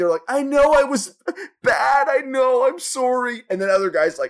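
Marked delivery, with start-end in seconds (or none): 0.3-3.4 very slow, tearful, blubbering, pitched-up sobbing. Retelling how some caught men sit there: imitating a man crying. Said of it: "sit there crying".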